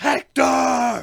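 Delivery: high, very loud bellowing shout. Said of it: "shouting it for, like, five minutes".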